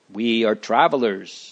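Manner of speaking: ordinary delivery, nothing marked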